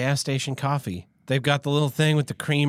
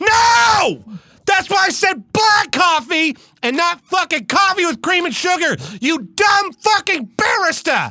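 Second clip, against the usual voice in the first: very high-pitched shouting rant, long drawn-out "no"; 8 dB louder than usual. Acting out a customer answering a barista, mock yelling at a barista. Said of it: "if you're yelling at him".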